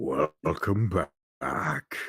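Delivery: put-on announcer voice. Saying welcome back in the voice of the Bejeweled games. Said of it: "in the voice of the Bejeweled games".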